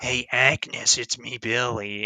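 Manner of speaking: slow, creepy, drawn-out voice. Discussing a movie, the speaker quotes a character calling Jess Agnes: imitating Billy's creepy voice. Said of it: "in like that really creepy uh, voice that he does".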